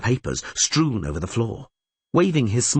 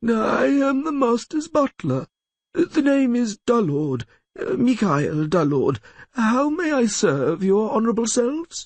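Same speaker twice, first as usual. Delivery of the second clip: very high, slightly squeaky, dim-witted voice; 12 semitones higher than usual. Narrator reads a lawyer posing as a butler to visitors: slightly squeaky voice. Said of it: "speaking with a slightly squeaky voice".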